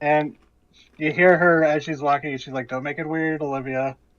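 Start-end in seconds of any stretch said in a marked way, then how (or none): 2.7-3.9 teasing, playful, lightly joking tone. Voicing the boss lady as she walks into her office: joking tone. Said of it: "you can tell she said it in, like, a joking tone".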